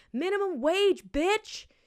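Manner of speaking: put-on, screamed, high-pitched, defiant yell. Recounting a man outside the window who woke them at 4 a.m.: retelling a scream. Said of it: "just screaming".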